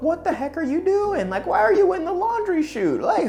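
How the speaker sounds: very high, alarmed voice.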